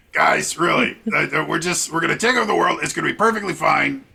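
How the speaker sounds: throat-straining character voice. Voicing Rick, who says they'll take over the world: throat-straining Rick voice. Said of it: "It's hard on my throat, but it's a fun voice to use".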